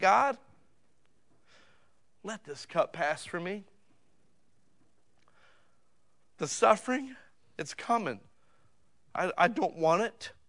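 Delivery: mock crying out. Retelling what Jesus says in the garden in Matthew 26, acting out a cry. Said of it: "he cries out and says".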